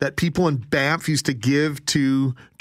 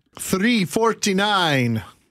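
put-on vampire count voice; 5 semitones higher than usual. Radio host giving the time, suddenly talking like the Count. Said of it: "I started talking like the count".

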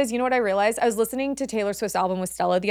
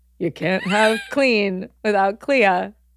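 slow, drawn-out, dead sincere voice. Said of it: "my voice where I say the truth and it's embarrassing".

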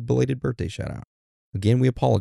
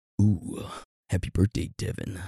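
mock-seductive voice, much quieter; 3 semitones lower, 5 dB quieter than usual. Answering a listener's birthday request for his most seductive voice; mock-seductive voice. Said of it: "happy birthday from [name] in his most seductive voice".

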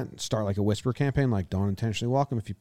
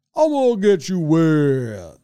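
slow, swooping, high, loud put-on cartoon voice; 6 semitones higher, 7 dB louder than usual. Recalling what the water thing would say, in a cartoon voice. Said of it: "it was like a cartoon voice. So it would be like".

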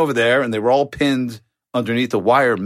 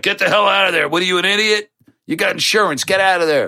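mock angry yell, pitched up; 7 semitones higher than usual. Retelling how his brother Matt yelled at him, imitating Matt yelling. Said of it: "Matt's yelling at me".

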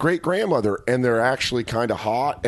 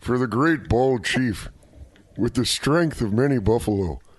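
put-on, exaggerated old man voice.

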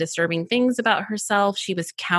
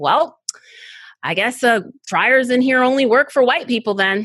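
put-on booming, really loud, carrying voice; 4 semitones higher, 5 dB louder than usual. Retelling what she said to her in a completely quiet bathroom, in a really loud voice. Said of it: "in this really loud voice".

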